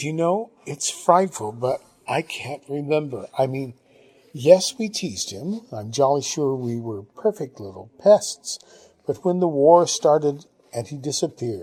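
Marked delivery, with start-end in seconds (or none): none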